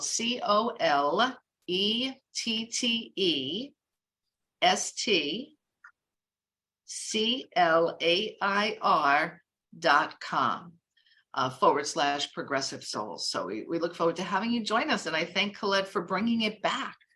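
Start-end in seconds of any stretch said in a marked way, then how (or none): 0.0-10.7 slow, letter-by-letter spelling. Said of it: "is spelled".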